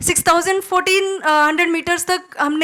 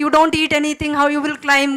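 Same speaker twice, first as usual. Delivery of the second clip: ordinary talk, nothing marked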